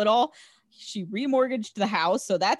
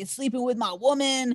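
put-on drunk man's voice, higher pitch; 4 semitones higher than usual. Retelling how Julio burst in confronting the dad, imitating drunk Julio. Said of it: "he's like super drunk".

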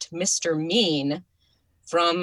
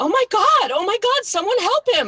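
acted out, very high, loud, shrill screaming; 6 dB louder than usual. Retelling seeing a little clown fall under a boat: retelling own screaming. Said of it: "I started screaming".

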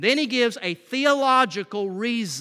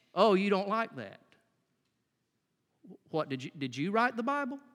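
quieter, mock-sarcastic tone; 7 dB quieter than usual. Acting out how he stops before moving on to challenge people, mock-sarcastic. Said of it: "gives a couple of highly sarcastic rhetorical questions".

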